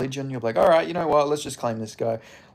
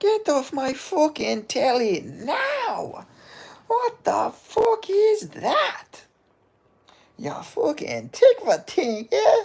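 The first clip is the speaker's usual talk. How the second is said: put-on Irish accent at a higher pitch. Retelling Conor laughing at a fighter on TV: Conor McGregor impression. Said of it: "when Conor was, like, laughing".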